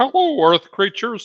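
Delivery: pitched way up and loud. Retrying a greeting, the speaker does a bad Marvin the Martian impression. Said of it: "my Marvin the Martian impression is terrible".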